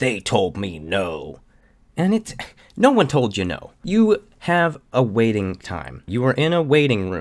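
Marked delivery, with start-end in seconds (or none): 0.0-1.4 play-acted aggrieved, hard-done-by, slow, upset tone. Imitating another speaker complaining about doctors: imitating someone upset. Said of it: "You seemed very upset with them because it was like".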